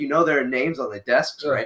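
ordinary talk, nothing marked

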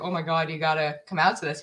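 ordinary talk, nothing marked

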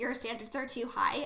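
usual speaking voice

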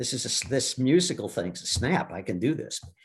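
ordinary delivery

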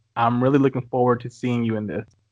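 ordinary talk, nothing marked

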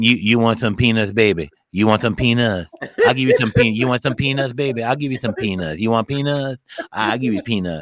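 put-on low, toothless old lady voice, gumming words. Retelling what the lady next to you kept saying, imitating a toothless lady. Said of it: "she had no teeth".

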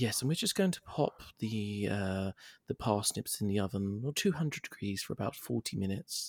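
soft, polished TV-cook voice. Describing a TV cooking show and its host; well-spoken Nigella impression. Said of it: "she has this really well spoken voice".

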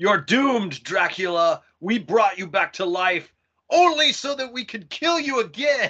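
raging, high-pitched screaming. Describing a Dracula scene where villagers surround him, retelling a villager screaming. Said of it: "he's screaming".

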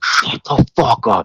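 acted, threatening, hostile screaming, stretched out slow. Recounting a man yelling at his apologizing roommate: retelling someone screaming. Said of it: "he's like screaming so loud that it like hurts your ears".

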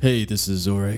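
put-on, seductive, come-hither sexy voice. Podcast host opening the show with an introduction, in a put-on sexy voice. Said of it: "That was my sexy voice".

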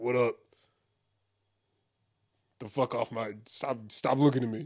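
strutting peacock voice. Acting out a peacock in the street staring at people: voicing a peacock. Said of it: "These peacocks are like".

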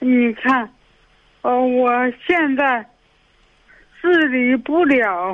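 speaking very slowly and with audible effort. Answering a radio host on the phone, speaking very slowly with effort. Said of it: "你说话语速特别慢，说话很吃力".

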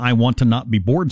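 normal talking voice

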